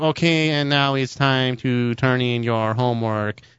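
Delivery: machine-like, robotic speech-synthesizer computer voice. Imitating how a man from class always spoke, Stephen Hawking computer voice. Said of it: "he talked like this every time".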